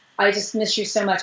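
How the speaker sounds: ordinary talk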